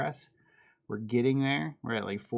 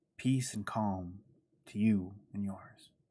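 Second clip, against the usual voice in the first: quiet, gentle, soft, hushed ASMR voice; 3 semitones lower, 4 dB quieter than usual. A streamer tries out a voice a viewer asked for, quiet voice. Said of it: "I'm trying to be quiet in a voice".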